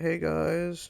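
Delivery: put-on mopey emo voice. Describing someone's older brother, the speaker imitates his greeting in a put-on emo voice. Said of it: "but he's emo. He talks. He's like".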